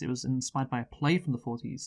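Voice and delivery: ordinary delivery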